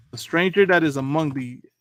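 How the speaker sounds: ordinary talk, nothing marked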